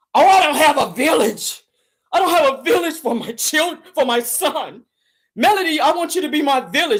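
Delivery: tearful, slow, crying voice. Retelling someone crying while asking another woman for help: imitating someone crying. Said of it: "Then you sit on there crying".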